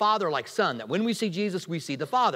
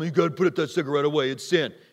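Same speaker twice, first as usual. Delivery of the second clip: put-on self-righteous, scolding tone; 4 semitones lower than usual. Speaker acting out churchgoers confronting a smoker outside church, mock self-righteous Pharisee scolding. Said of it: "you sound like a Pharisee when you said it".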